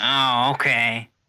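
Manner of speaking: loud, belted cartoon slug-woman character voice. Voicing a prostitute answering a player: slug woman from Monsters, Inc voice. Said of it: "Why does she sound like the slug woman from freaking Monsters, Inc?".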